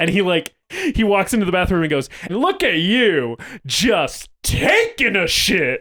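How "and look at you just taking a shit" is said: very slow, sing-song, swooping, drawn-out delivery. Retelling a favorite line delivery from a scene in The League: impression of a TV character's line. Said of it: "It was a very good impression".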